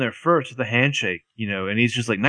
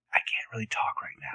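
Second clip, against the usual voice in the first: hushed whisper under the breath; 10 dB quieter than usual. Recapping a scene, Aria looks around before answering; imitating Aria's hushed voice. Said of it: "in a more hushed voice".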